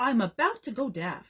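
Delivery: plain reading voice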